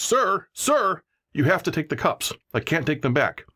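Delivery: acted, high, mad, insistent yell. Retelling how a woman yelled after him as he walked away, imitating a mad yell. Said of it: "she got mad and kind of yelled".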